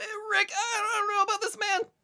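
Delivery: very high, squeaky, hesitant, uncertain cartoon voice. Trade Rick and Morty lines with another speaker, addressing Rick in a Morty voice. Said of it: "doing the Morty voice kind of hurts".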